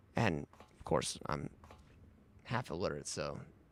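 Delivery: ordinary talk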